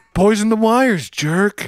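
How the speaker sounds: put-on grumpy anger. Introducing a segment of answering listener questions, mock angry. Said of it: "he's not happy about them".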